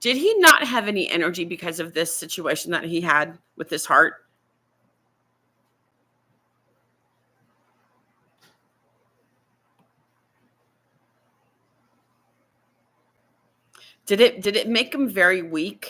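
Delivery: tearful voice, crying while talking. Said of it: "I hate crying during this stuff".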